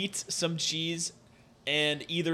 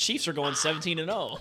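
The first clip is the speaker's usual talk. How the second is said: ordinary talk, nothing marked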